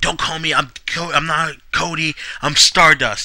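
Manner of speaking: put-on angry, retorting tone. Retelling a backstage segment, the character confronted: imitating Stardust getting mad. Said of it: "he gets mad".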